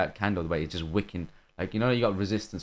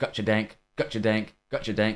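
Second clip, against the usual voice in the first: put-on American accent in a child's voice; 2 semitones higher than usual. Retelling how a kid taunted after each kill: imitating a kid's american accent. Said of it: "Freaking American accent".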